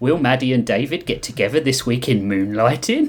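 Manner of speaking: ordinary delivery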